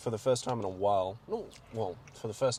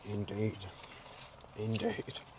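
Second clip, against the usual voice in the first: soft, quiet put-on character voice, murmured; 5 dB quieter than usual. At McDowell's after seeing Superman, slipping into a bit: Alfred voice. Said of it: "I'm doing the fucking Alfred voice".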